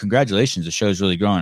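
ordinary talk

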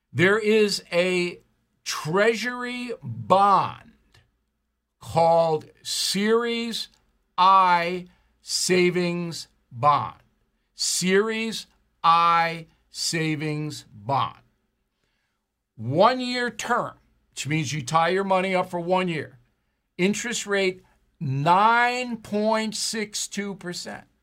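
reading aloud very slowly. Reading an item aloud in the new Smart Life segment, very slowly. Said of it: "I'm going to read this very slowly".

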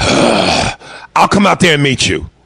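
put-on exasperated, fed-up tone. Retelling a reply said in a moment of frustration: imitating a frustrated reply. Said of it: "in a moment of frustration".

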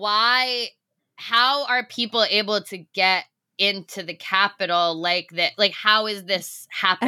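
plain

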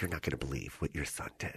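very quiet hushed whisper, barely voiced. Retelling how the mom called at work: imitating someone whispering. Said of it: "so she's whispering".

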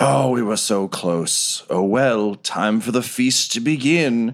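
deeply disappointed, let-down voice, slow delivery. Voicing a character whose plan just failed: very disappointed character voice. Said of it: "ever so disappointed and says".

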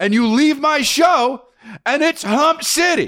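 very high-pitched, shrill yell. A show host describes someone leaving the show, yelling. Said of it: "You are yelling".

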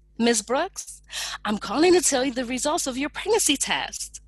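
put-on bright, bubbly, fast, exuberant cheery voice. Retelling what a nurse said on the phone, imitating an exuberant cheery voice. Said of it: "in her most exuberant and cheery voice".

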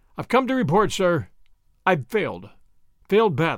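ordinary delivery

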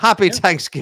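stock Irish accent. Repeating a holiday greeting as a joke: stereotypical irish accent. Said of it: "somebody with a stereotypically Irish accent".

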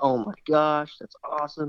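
put-on excited, thrilled, loud scream of delight. Retelling a buddy's reaction on the phone: imitating an excited loud scream. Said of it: "he just screamed so loud".

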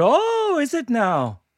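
put-on high, very slow, drawn-out Irish accent. Retelling answering a man in dublin, suddenly slipping into an irish accent. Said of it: "He just suddenly go into it".

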